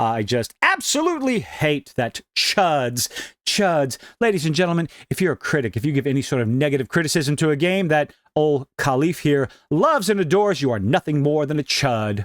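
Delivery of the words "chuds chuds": strong punched stress on the word "chuds". Rereading a quoted post, correcting its emphasis: stress on chuds. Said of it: "may have emphasized the wrong word".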